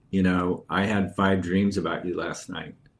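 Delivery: ordinary delivery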